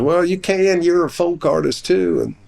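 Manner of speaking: put-on plain-spoken Southern accent. Retelling what R. A. Miller replied: Southern accent imitating R. A. Miller. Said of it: "he had this Southern accent".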